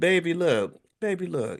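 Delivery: put-on high, slow, sweet baby voice. Imitating how Tabitha Brown would say her statement: Tabitha Brown sweet baby voice. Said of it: "in her sweet baby voice".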